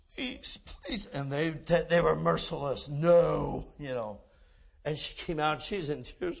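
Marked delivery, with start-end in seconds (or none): 0.2-1.1 put-on small pleading, much higher, quieter. Retelling a woman pleading with motel staff who refused dogs; imitating little pleading. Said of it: "let me talk to them with these little".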